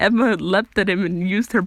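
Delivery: plain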